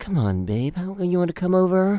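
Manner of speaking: raspy, high, smooth and sweet radio-host voice. Describing a confident guy, imitating his pickup line in a raspy NPR talk-show voice. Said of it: "like that raspy voice, like that NPR talk show voice".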